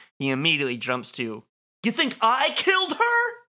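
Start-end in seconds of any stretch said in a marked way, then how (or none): 1.8-3.3 high-pitched, abrupt, sudden delivery. Retelling a character's reaction after hearing his rights: imitating Bobby Briggs. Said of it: "he says it like that 'cause he's Bobby Briggs".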